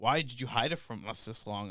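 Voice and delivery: put-on laughing while talking. Retelling how mom asked about the hidden tattoo: imitating mom laughing while talking. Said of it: "she's laughing her ass off while saying this".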